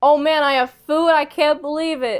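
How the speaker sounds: mock excited, loud, weepy tears of joy. Acting out Kaiji finding food: Kaiji imitating excited tears of joy. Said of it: "excited, tears of joy".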